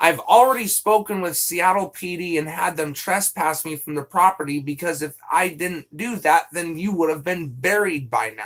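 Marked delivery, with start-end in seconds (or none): none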